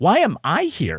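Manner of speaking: slow, high, bewildered, lost-sounding puzzled wonder. Imitating an actor's delivery, always kind of puzzled. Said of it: "He's always kind of like puzzled".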